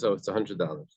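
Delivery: plain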